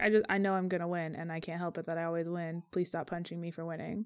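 soft, completely deadpan delivery with no reaction. Describing a favorite character who always wins, imitating Lucky's deadpan. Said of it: "real deadpan about everything he's like".

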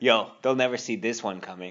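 ordinary talk, nothing marked

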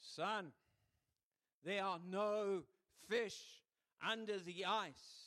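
put-on loud, booming, resounding voice. Telling a joke, a voice calls out to an ice fisherman, loudly.

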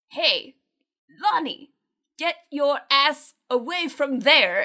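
weird disguised shouting voice. Recounting an actor shouting to divert kids from the Myers house: retelling a yell in a weird disguised voice. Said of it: "He yells".

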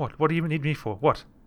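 put-on talking sheep voice. Narrating a scene where a sheep looks up at the listener, in a talking sheep voice. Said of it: "And the sheep looks up to you and it's like".

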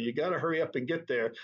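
ordinary talk, nothing marked

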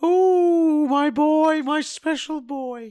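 very slow wacky put-on voice, long drawn ooh. Introducing a segment in a put-on voice: wacky character voice. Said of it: "I'm getting tired of the voice".

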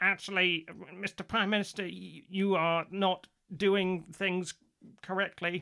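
slow, heavily nasal voice. Showing a better version of the impression, more nasal: nasal Keir Starmer voice. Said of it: "it needs to be a bit more nasally".

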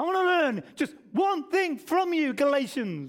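put-on irate, angry preaching tone. Speaking Paul's words to the Galatians for your listeners, acting out Paul's angry tone. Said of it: "let me say it in his Paul's tone".

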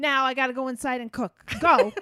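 mock-angry delivery. Retelling what Mom said after the car started, mimicking Mom angry. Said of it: "she was so mad".

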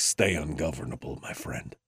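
breathy beer-commercial spokesman voice. Quoting a line as said by the Dos Equis guy: Dos Equis guy impression. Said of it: "I got it with the Dos Equis guy".

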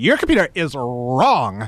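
mock sassy woman's voice, all sass. Retelling a caller's repeated line, imitating a sassy woman. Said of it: "like a sassy woman".

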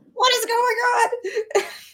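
very high, drawn-out, panicked scream. Playing a character dangling from a dog's mouth: screaming in panic. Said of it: "screaming 'cause I'm just dangling from Rainbow's mouth".

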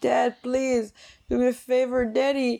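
high, shrill screaming. Retelling a scene where she screams from the window to her dad: imitating someone screaming. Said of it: "screaming at him, like".

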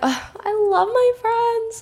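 very high-pitched, slow, overcome with feeling. Podcast host talking about keeping close friends around, getting emotional. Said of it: "I'm like getting emotional".

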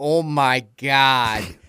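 put-on thick Midwestern accent. Quoting a man from Milwaukee, in a thick Midwestern accent. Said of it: "he has this thick Midwestern accent".

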